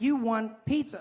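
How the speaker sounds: high voice-assistant voice. Retelling asking the phone assistant to call someone: imitating Siri. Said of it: "She's like".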